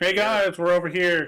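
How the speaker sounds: high, carrying yell calling out across a distance. Calling in character to party members at the job board: yelling to friends far off. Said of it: "Can I yell to them".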